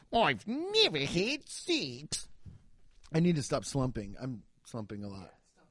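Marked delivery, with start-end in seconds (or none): 0.1-2.2 fake Australian accent, very drawn out, slow, swooping. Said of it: "You're getting into it".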